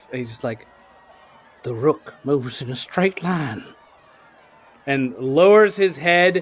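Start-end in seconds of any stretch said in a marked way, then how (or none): 1.6-3.6 hushed, private half-whisper under the breath. Narrating a game scene where a character eyes a small window, half-whispering to himself. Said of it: "just whispers to himself".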